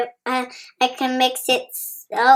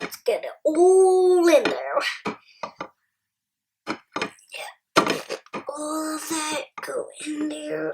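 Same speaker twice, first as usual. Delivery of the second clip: cowboy voice, all drawn out; 3 semitones higher, 4 dB quieter than usual. Speaker making a brownie mix, talking like a cowboy to be funny: cowboy voice. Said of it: "I'm talking like a cowboy".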